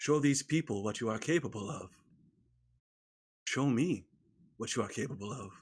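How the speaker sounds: very quiet, hushed, under the breath. A character stares off into the desert as they leave town: speaking very quietly. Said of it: "and he says very quietly".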